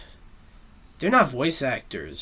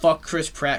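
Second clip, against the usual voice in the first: ordinary talk, nothing marked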